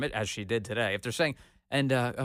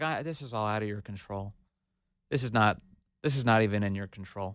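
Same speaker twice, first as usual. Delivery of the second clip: mock worn-out, very exhausted, weary, spent delivery; 3 semitones lower than usual. Imitating a news anchor offering a campaign spokesman an excuse: imitating Andrea Mitchell's exhausted voice. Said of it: "in a very exhausted voice".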